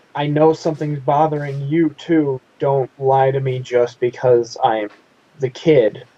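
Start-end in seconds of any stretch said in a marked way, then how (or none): none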